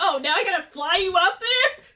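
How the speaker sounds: put-on unhappy, sassy tone, loud and high. Retelling the character being asked to fly others up: sassy Bartholomew voice. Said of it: "He's so sassy".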